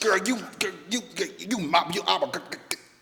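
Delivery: high, loud stammering stutter with false starts. Mocking the other speaker's sweet talk: imitating someone stuttering. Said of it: "I didn't stutter like that".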